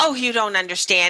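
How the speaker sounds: ordinary delivery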